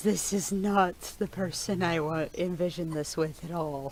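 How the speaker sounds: loud, weary, let-down sigh through the words. Voicing a character after a dark scene: sighing in character. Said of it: "Treem sighs and says".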